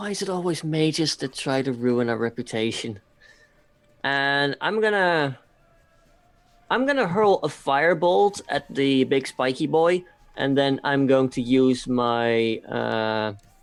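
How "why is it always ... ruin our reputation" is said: low, grumbled mutter under the breath. In character, watching Bastion run toward the humanoid: muttering under breath. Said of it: "I just mutter under my breath".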